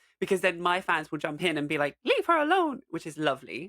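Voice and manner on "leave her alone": very high-pitched cartoon mouse voice. Imitating fans who jump in to defend her: Mickey Mouse voice. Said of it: "in the Mickey Mouse voice".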